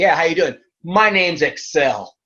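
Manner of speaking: loud, swaggering, self-assured, cocky tone. Retelling walking into training and greeting the trainer: imitating own cocky self. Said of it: "I'm walking and cocky as hell".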